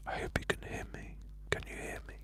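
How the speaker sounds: very quiet whisper spoken straight into the mic. Having just dropped the mic, the speaker checks whether listeners can hear, whispering. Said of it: "I'm whispering into it".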